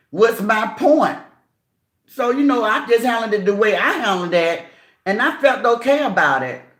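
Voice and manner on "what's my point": daring, combative, confrontational, challenging tone. Retelling how a woman came for her, mimicking a confrontational tone. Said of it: "I'm using my voice and I'm saying how she sound".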